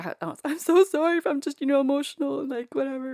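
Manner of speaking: put-on tearful sobbing. Recounting apologizing at the nurse's station after having a baby: retelling own sobbing apology. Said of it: "I'm sobbing at the nurse's station".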